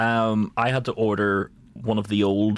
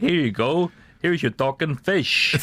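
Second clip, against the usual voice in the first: put-on New York tough-guy voice, pitched higher; 7 semitones higher than usual. Retelling the postman's delivery, slipping into a Robert De Niro voice. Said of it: "You turned into Bobby De Niro now".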